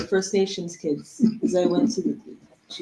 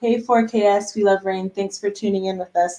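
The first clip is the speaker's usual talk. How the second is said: ordinary talk, nothing marked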